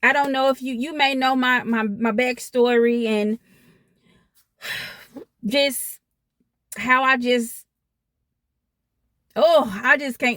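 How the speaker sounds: overwhelmed, stammering emotional outburst, words tumbling out. Starting to tell her viewers about her backstory, overwhelmed with emotion. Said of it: "Let me calm down".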